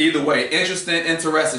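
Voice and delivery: ordinary talk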